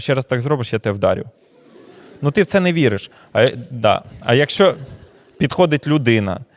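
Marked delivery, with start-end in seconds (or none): none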